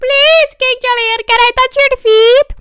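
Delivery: very high, very loud shrill cartoon voice. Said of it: "how to do the Mort voice".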